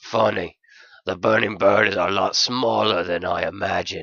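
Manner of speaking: gruff but fun dog character voice. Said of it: "He was a stubby, stout excuse for a canine. ... gruff, but fun!".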